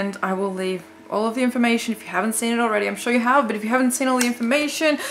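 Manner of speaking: nervous babble, words tumbling out, rushed and fast. Doing the challenge in the bathtub, the speaker gives the information: talking really fast, nervous. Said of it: "I'm talking really fast because I'm really nervous".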